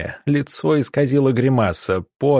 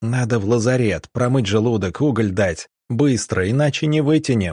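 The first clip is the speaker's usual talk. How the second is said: ordinary delivery, nothing marked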